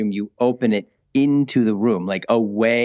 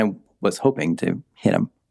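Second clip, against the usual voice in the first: normal talking voice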